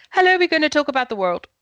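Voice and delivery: rushed, all on one breath. Teaching pacing, the speaker shows a line said all on one breath, no pauses. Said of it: "if you had to talk that on one breath with no pace".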